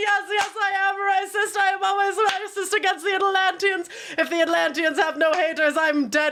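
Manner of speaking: mock laughing through the words, barely holding together. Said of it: "he starts laughing his ass off".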